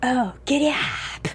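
mock whispered voice. Recounting a favorite movie moment about a stuck sleigh, retelling a whisper instead of a yell. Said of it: "he's like whispering instead of yelling".

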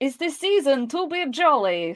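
failed Italian accent drifting into Russian accent. Told to imagine eating pizza, a speaker gives it a go in a bad Italian accent. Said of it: "That was Russian".

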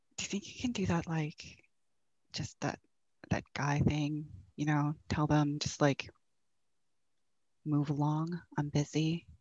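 soft, hushed half-whispered aside. Voicing a character who half-whispers a request as guards approach: half-whispering in character. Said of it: "pulls back enough to whisper to Billy and says".

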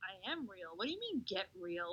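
play-acted, earnest, bewildered and baffled tone. Retelling a movie scene: imitating sincere confusion. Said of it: "he was all, like, sincerely confused".

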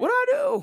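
strange surprised voice, very high, loud and squeaky.

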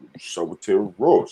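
deep, low, casual voice. Retelling a question from a halftime stream, imitating Sim's deep voice. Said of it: "Sim with the deep voice".

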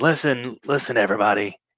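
attempted raspy tone in a promo-style voice. Retelling a wrestler's promo on the mic: imitating Brian Pillman's raspy voice. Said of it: "I'm trying to make my voice raspy like him".

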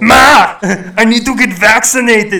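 very loud, high shout, slow and drawn out. Act out someone calling to Ma about getting vaccinated, in an Arnold Schwarzenegger voice. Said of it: "they sound more like Arnold Schwarzenegger there".

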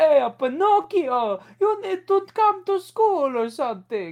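very high, loud, hammed-up put-on Italian accent. Mocking Tom Hanks's performance, speak to Pinocchio in a stupid Mario accent. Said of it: "doing like that stupid Mario accent".

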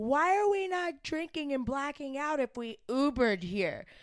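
high yelling. Retelling how a woman spoke to her friend after they Ubered, imitating someone yelling. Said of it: "She's like yelling at her friend".

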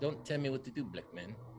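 Afrikaans-accented speech. Answering a request to hear an accent, doing an Afrikaans accent. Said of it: "Specifically Afrikaans".

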